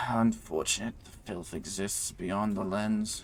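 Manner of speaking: slow, soft, sneering mutter. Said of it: "just kinda sneers and mutters".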